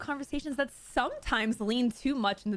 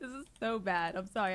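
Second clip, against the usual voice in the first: laughing mid-sentence while speaking; 3 semitones lower, 4 dB quieter than usual. Reacting to a troubling statement, laughing while talking. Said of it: "I'm laughing".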